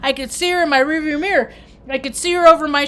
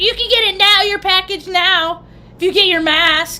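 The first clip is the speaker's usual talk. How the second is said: mock-loud, put-on loud talking voice; 4 semitones higher than usual. Retelling a woman telling him to get his mask, retelling her loud talk. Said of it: "She's like talking really loud".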